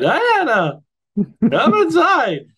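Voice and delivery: high, loud voice cracking like puberty.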